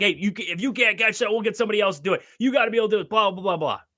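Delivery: mild, berating coach rant. Retelling a coach ripping a young catcher: imitating a coach hollering. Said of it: "this coach is just hollering at him".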